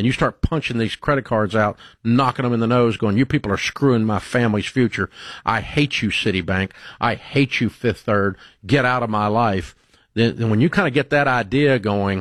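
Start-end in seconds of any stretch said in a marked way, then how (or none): none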